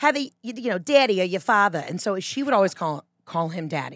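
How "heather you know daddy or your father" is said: put-on Boston accent. Explaining why she says daddy, the speaker imitates her mom in a boston accent. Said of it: "my mom says it in like a Boston accent".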